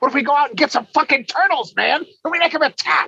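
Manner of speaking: very high, pushed-up put-on voice. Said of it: "that sounded like Charlie Day trying to do a voice".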